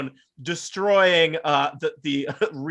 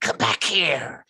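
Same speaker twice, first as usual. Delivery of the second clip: threatening, menacing, hushed whisper. Voicing a shadowy creature calling a fleeing barbarian back: whispering menacingly. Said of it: "Chemsheim whispers".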